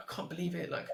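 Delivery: high, annoyed, fed-up complaining tone. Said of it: "she's getting so annoyed".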